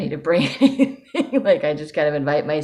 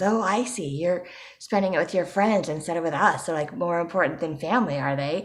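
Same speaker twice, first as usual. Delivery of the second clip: snide, needling sarcastic tone; 2 semitones higher than usual. Retelling what relatives would say about skipping family dinner: imitating sarcastic relatives. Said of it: "they would make sarcastic comments".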